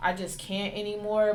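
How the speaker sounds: ordinary talk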